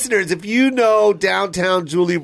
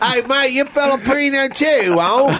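put-on strong Australian accent, higher-pitched; 7 semitones higher than usual. Imitating a Filipino man with a strong Australian accent. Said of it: "really strong I-, I-, Australian accents".

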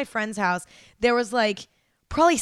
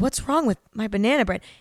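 sad, upset, wounded-sounding voice. Retelling a video of a coworker-ignored baker: imitating an upset man. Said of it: "And he was so upset".

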